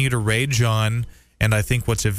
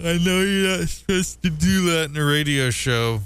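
high voice, words stretched through a yawn; 6 semitones higher than usual. Radio show host pausing on air to yawn, speaking through a yawn. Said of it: "I have to yawn".

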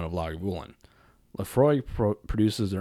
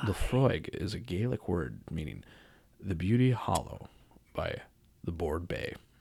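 formal, read-aloud narration voice; 3 semitones lower, 6 dB quieter than usual. Among friends tasting whiskey, one reads the bottle's label aloud in a formal reading voice. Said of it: "turned on his reading voice for that one".

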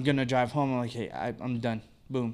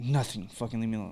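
put-on passive-aggressive, snapping tone. Retelling how he answers when asked what's wrong: imitating passive-aggressive attitude. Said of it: "he gets, like, this, like, aggressive, like, passive-aggressive, like, attitude".

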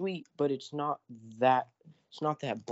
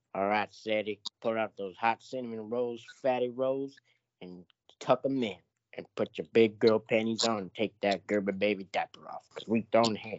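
brash, taunting character voice, dropped low; 4 semitones lower, 3 dB louder than usual. Doing an impression for friends: Uncle Ruckus voice. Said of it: "I can do good Uncle Ruckus impression".

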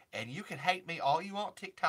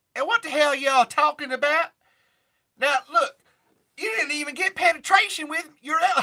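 put-on Southern country drawl, higher and louder; 12 semitones higher, 14 dB louder than usual. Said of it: "I can do a [name] impression".

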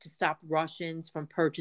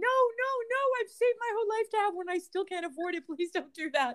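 play-acted very high, anguished, pleading wailing scream. Talking about influencers cutting up Chanel bags, acting out a scream. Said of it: "and I'm screaming".

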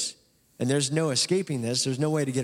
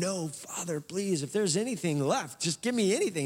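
acted, high, sobbing, broken-down weeping; 5 semitones higher, 4 dB quieter than usual. Retelling a son's plea to his father: imitating a weeping plea. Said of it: "in the moment he breaks down weeping".

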